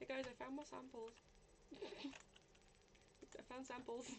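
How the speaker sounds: very soft, breathy, barely-there whispered voice. Showing how they sound beside screaming party members; quiet voice. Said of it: "my quiet voice next to them".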